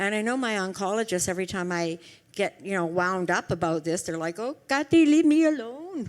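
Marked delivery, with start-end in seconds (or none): 4.4-6.1 really bad put-on French accent, high and loud. Imitating doctors brushing off a patient: bad french accent. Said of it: "That was a really bad accent in French".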